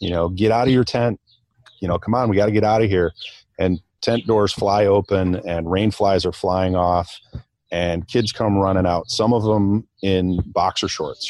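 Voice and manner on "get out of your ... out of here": urgent, called-out shout. Retelling yelling at the boys to leave their tents: retelling own yell. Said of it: "I yelled at the boys".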